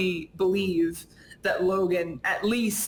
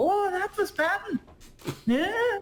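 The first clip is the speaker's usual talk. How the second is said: sudden, very high, put-on stage Irish accent; 12 semitones higher than usual. Talking with a co-host about a video scene, in a sudden Irish accent. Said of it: "did you just become Irish?".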